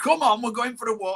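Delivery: put-on broad Yorkshire accent. Telling the listener about hearing them walk their dogs, broad yorkshire accent. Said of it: "you with your wonderful Yorkshire accent".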